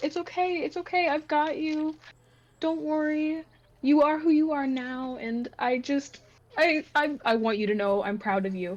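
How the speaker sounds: choked-up, teary, holding back tears. Retelling comforting words said to someone crying, choking up. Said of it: "I'm gonna cry".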